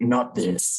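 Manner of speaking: furious, guttural, throaty voice, very high. Voicing a man heard through the phone, very angry and guttural. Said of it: "very angrily and gutturally".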